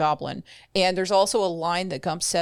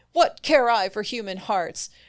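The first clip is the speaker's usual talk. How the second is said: cross, riled-up, angry and heated; 4 semitones higher than usual. Retelling a story scene where Una gets mad again: imitating Una getting mad. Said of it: "Una gets mad again".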